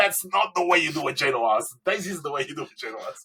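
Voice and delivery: mock, high-pitched mild half-yell. Retelling screaming at bakers on TV while watching: imitating own screaming at TV. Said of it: "I was screaming at them".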